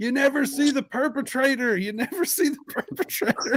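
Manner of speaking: piercing, shrill, high shriek, repeated over and over. Retelling a kid out front of the theater: imitating a kid screaming. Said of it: "there was a kid out front screaming about".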